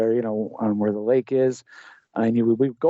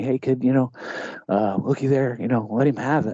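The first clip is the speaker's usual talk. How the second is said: breath-only stage whisper. Retelling how Dad pointed out a deer while hunting: imitating Dad half-whispering. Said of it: "he kinda whispers it to me".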